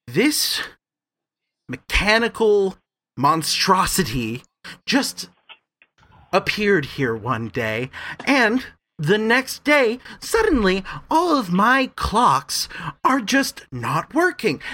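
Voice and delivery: seething, outraged, fuming high-pitched rant. A man answers a janitor who has just apologized to him, fuming. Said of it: "the man is just fuming".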